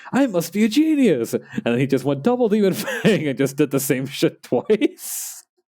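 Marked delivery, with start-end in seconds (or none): 0.1-1.3 very high, slow mid-2000s anime dub voice. Recounting an anime character's line after he levels up, in a 2000s anime dub voice. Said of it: "in like a very mid two thousands anime dub voice".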